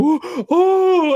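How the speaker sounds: frantic, panicked scream, very high and loud. Retelling a friend's car going into a ditch: imitating a friend screaming. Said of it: "screaming, like".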